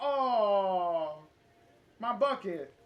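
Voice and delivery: loud, mournful, sorrowful cry with a long, stretched-out oh. Retelling what the janitor said after the bucket fell: imitating a sad janitor. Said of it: "And then he got real sad".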